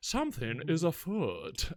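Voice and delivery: put-on Southern gentleman accent. Describing an actor's accent in a film on a podcast, doing a Daniel Craig southern gentleman accent. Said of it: "he's like a southern gentleman".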